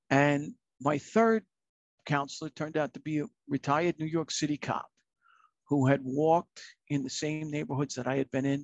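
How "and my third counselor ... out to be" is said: plain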